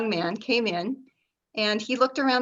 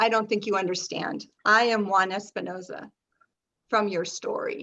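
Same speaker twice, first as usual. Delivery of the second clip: acted, flat mock-deadpan delivery. Retelling what a man said to a woman in a store, retelling a deadpan line. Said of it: "sort of deadpan and looked straight into her eyes and said".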